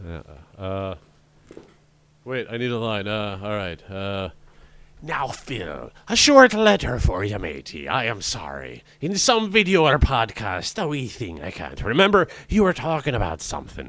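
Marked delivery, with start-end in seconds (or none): 5.0-13.9 swooping put-on seafaring pirate voice, laid on thick. Asked for a best pirate voice, reading a short letter in put-on pirate voice. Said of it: "do your best pirate voice".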